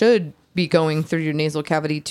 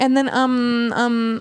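higher, halting, um-filled mock hesitation with filler words. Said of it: "I just can't stand people that say".

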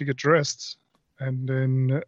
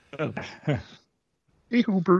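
high, goofy, puppet-style character voice; 5 semitones higher than usual. A player greets Hubert during the game, Ernie voice. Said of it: "It's just my Ernie accent".

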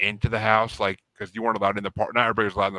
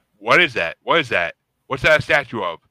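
loud, put-on panicked, freaked-out stammering; 3 semitones higher, 6 dB louder than usual. Retelling an army buddy's reaction to a statue: imitating someone freaking out. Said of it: "he freaked out".

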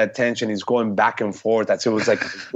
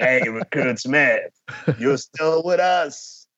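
Marine drill instructor voice; 3 semitones higher than usual. Mimicking a Marine drill instructor addressing a recruit, in a drill instructor voice. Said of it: "you got them with that voice".

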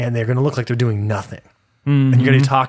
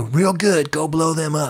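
deliberate, unhurried drawl, words dragged, pitched up; 4 semitones higher than usual. Acting out a call to Israel under the table: Donald Trump voice. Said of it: "That was my Donald Trump".

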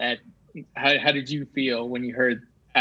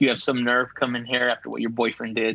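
put-on stern voice. Retelling a scene where Hawk gets stern with Sam: imitating Hawk getting stern. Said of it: "gets stern with her. He's like".

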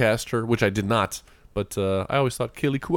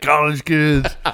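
mock mushy, garbled words, not formed clearly; 4 semitones higher, 4 dB louder than usual. Imitating a character stung by bees who can't speak clearly. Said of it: "He can't speak".

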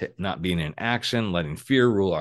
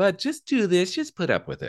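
coaxing voice, pitched high. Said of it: "your little stubborn shadow in there tell you".

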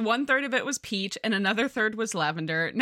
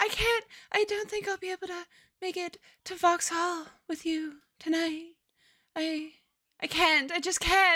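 high, put-on swooning, languishing faint voice; 8 semitones higher than usual. Retelling what she said while lying in bed, mock swooning. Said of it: "I'm swooning".

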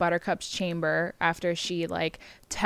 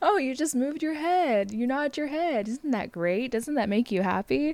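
pitched-up, high, encouraging, praising tone; 7 semitones higher than usual. Retelling a movie scene where a friend cheers on a recovering man: imitating Fezzik, put-on encouraging. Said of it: "He's very positive".

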